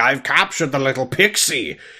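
smug put-on captain voice. Retelling a scene where Captain Hook shows up: smug Captain Hook impression. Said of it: "so smug. He's like".

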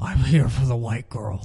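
put-on, very deep, very low fat-man voice. Retelling a story, imitating a man at the door, in a fat man voice. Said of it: "he's got the fat voice".

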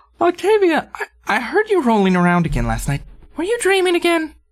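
very high, sleepy voice, yawning mid-word. Narrator voices Celia walking up to Octavia, yawn in her voice. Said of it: "she sort of has a yawn in her voice".

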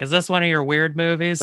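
ordinary talk, nothing marked

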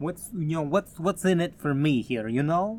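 put-on New York Italian accent. Talking about gratitude, the speaker tries a new york italian accent. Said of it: "That was my best New York Italian accent that I could come up with".

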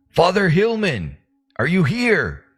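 calling out loudly. Player's character entering a building and calling for father hillman, shouting loudly. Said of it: "I just shout out loudly".

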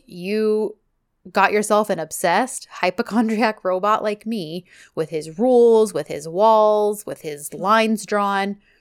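normal talking voice

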